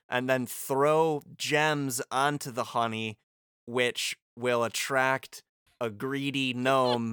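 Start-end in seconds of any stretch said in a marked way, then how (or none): none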